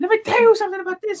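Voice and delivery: very high, fast, excited rush. Showing how a friend talks when excited: imitating Jamie's Muppet-like voice. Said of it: "when he gets excited, he's like".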